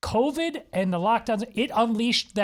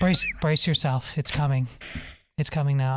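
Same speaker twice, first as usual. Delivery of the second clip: put-on hushed tones, much lower; 8 semitones lower than usual. Imitating a man reading his book to kids; imitating hushed tones. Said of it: "the hushed tones".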